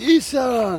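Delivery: acted very high, loud, sloppy drunken holler. Retelling a man on the beach shouting after a crying woman: retelling a shout. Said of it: "Man skrek ju på engelska".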